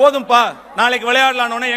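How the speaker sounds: ordinary delivery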